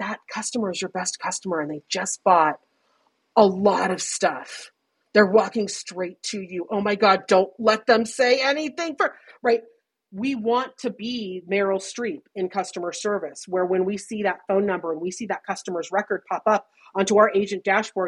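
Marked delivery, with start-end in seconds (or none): 0.0-9.1 pretend whispering. Acting out an assistant standing behind you with customer tips: imitating a whisper. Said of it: "standing behind us whispering, like".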